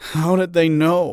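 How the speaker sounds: small, quivering voice. Reading a story aloud, a frightened character asks a question: small quivering voice. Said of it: "in a small, quivering voice".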